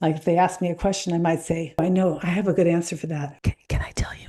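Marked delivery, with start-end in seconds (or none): 1.8-4.3 soft, hushed whisper. Showing how they play with their voice when someone asks a question: whispering. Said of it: "I like to go to whisper".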